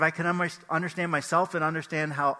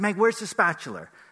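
play-acted short-tempered, unfriendly, irritable tone; 2 semitones higher than usual. Retelling asking for the spatula: retelling an irritable question. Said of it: "I was kinda irritable".

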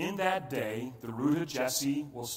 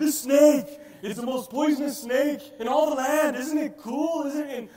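loud, presenting wildlife-show host voice; 12 semitones higher, 10 dB louder than usual. Retelling how Steve Irwin held a deadly snake to the camera: imitating Steve Irwin without the accent. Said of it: "hold a deadly snake and look into the camera and go".

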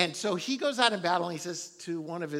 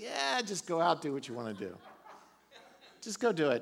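play-acted, dripping sarcastic tone. Retelling how the prophet answers the king: imitating a sarcastic reply. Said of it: "in kind of a sarcastic version realm".

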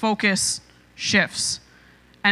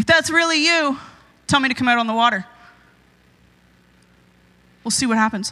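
sassy put-on voice; 3 semitones higher than usual. Acting out Peter daring the figure on the water: sassy Peter voice. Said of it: "that really sassy guy ... with a little extra attitude".

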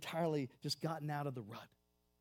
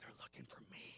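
very quiet, faint, breathy whisper. Telling a story, the speaker voices a little guy answering a man, retelling a whisper. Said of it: "Little guy whispers".

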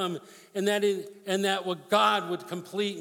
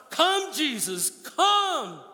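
excited shouting, pitched higher; 8 semitones higher, 3 dB louder than usual. Calling out for jesus to come, yelling excitedly. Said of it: "Sorry, I'm, if I'm yelling, I get excited".

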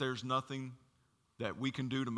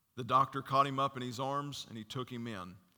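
normal talking voice

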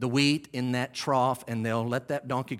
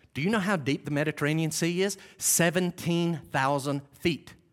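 plain

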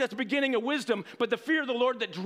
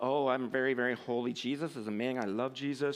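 mock pious holy voice, much lower, quieter, slower; 11 semitones lower, 5 dB quieter than usual. Speaker mocking how people try to sound holy, in a mock-pious holy voice.

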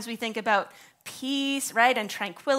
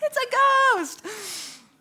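tiny, very high piping voice; 9 semitones higher than usual. Reading the disciples' cry aloud, hearing it in Wilbur's little voice. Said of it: "I've got Wilbur's little voice in my head".

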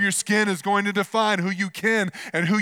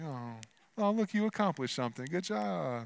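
soft, affectionate amusement. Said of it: "it's like".

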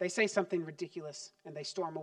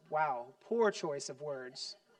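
ordinary talk

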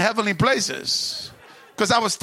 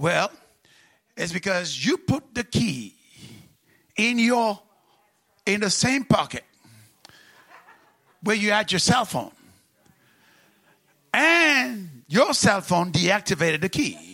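put-on Singaporean English accent, drawn-out; 2 semitones lower than usual. Retelling what a singaporean lady told him, in an attempted singaporean accent. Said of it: "I'm going to try to make a Singaporean accent".

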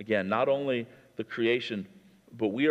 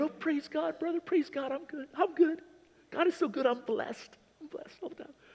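sarcastic, very high, chipper, cheerful voice; 3 dB quieter than usual. Mocking the chipper superficiality of Christianity: sarcastic chipper churchgoer voice. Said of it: "I'm being a little sarcastic here".

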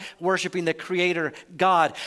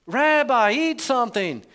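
acted Yiddish-style accent; 5 semitones higher, 3 dB louder than usual.

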